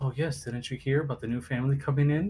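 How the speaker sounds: quiet, hushed whisper. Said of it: "little whispers here and there".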